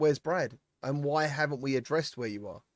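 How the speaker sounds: ordinary talk, nothing marked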